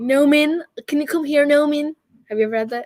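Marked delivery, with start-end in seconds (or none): 0.0-1.9 put-on American man's accent, high and slow. Asking if someone was ever called over by an American man: imitating an American man. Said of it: "that one American man who's just like".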